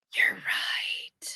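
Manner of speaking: soft, breathy whisper, barely voiced. Admitting the other speaker is right, repeated after being asked: whispering. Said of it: "I always love it when you whisper it".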